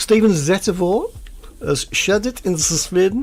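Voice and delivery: high-pitched, slow mock German accent. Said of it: "that's a German accent".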